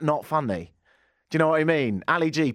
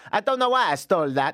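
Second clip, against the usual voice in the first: bad, over-the-top put-on German accent drifting into Italian; 3 semitones higher than usual. Quoting a man, trying a bad German accent that sounds Italian. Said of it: "I think mine's about to come out somewhat Italian, but we'll try. ... it's pretty offensive Italian at that".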